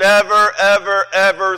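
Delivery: never, ever, ever each hammered with heavy stress. Reading a verse aloud to show the original emphasis, stress on never ever ever. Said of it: "let me read it to you the way the original language would be".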